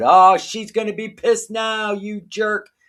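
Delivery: put-on high yell. Retelling what they shout at the tv while watching a show: imitating yelling at the tv. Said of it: "I'm yelling out loud".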